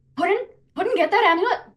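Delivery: shrill, very high-pitched yell. Shouting in character across a fight to a companion: shouting. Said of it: "I'm gonna shout".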